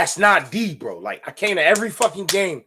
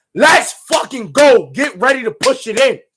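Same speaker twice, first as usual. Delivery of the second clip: loud, high-pitched screaming voice; 6 semitones higher, 5 dB louder than usual. Retelling hyping up his man before a score, retelling his own scream. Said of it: "I'm screaming like".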